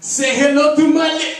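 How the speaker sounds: very high, very loud, dramatic gangster cry, abruptly cut off. Retelling getting ready to do his best impression: Scarface impression.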